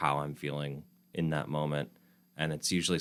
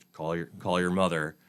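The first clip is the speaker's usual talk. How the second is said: mock stern voice, louder; 4 dB louder than usual. Quoting a father's reminder to call your mother: imitating a stern voice. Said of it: "in a very stern voice".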